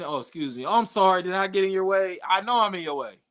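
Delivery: put-on apologetic, begging, pleading voice. Acting out how asking politely sounds: mock begging and pleading. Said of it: "begging and pleading and asking".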